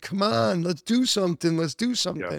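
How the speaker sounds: mild, half-voiced, egging-on shout. Retelling yelling at a video in the office: retelling own yelling. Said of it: "I'm sitting there yelling at the video saying".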